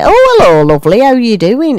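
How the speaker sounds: sing-song northern English accent. Showing how the accent creeps into a friendly greeting: northern accent. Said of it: "the trouble with the northern accent".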